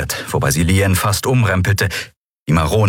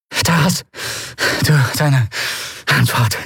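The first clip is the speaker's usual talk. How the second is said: gasped out between breaths, halting, high-pitched panting; 6 semitones higher than usual. Narrator reads a character pressed against a wall, panting in a lowered voice. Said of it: "keuchte sie mit gesenkter Stimme".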